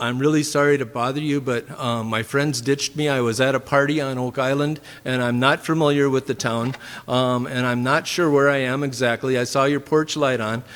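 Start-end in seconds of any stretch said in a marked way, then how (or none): none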